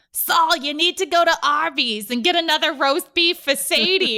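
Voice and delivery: loud, high, belted grandma voice. Retelling what a woman used to say to their grandfather, imitating her voice. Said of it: "And she would just be like".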